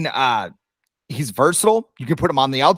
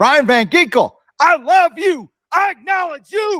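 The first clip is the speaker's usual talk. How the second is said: high, loud, gushing, lovestruck delivery. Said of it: "I'm having a show, aren't I?".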